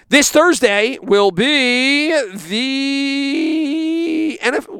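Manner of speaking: voice breaks, very high, slow and drawn out. Announcing the upcoming schedule to viewers: voice cracking. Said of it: "did my voice just crack?".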